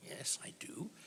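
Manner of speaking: hushed, whispered voice.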